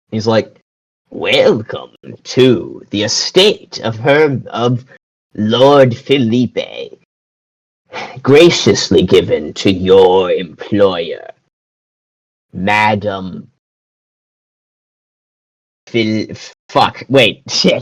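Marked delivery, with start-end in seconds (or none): 1.0-16.2 low, creepy, hunchbacked servant voice. Storyteller voices the servant greeting newcomers to the estate: creepy hunchbacked servant voice. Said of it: "creepy ass hunchbacked ass servant".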